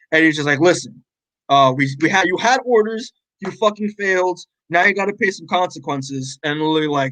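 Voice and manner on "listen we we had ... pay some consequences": ordinary talk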